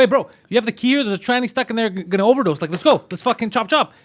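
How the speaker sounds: high, fast, urgent, pushy delivery.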